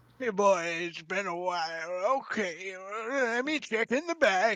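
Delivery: put-on loud old man voice. Voicing an old man whom the group asks for spices: old man voice. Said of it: "giving him an old man voice".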